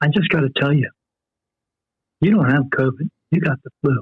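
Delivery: put-on whisper. Retelling what a nurse told a patient: imitating a whisper. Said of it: "whispers in on me".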